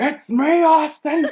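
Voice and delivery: very high, shrill, loud scream. Quoting the higher power angle line they scream at people: imitating someone screaming. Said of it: "just start screaming it at people".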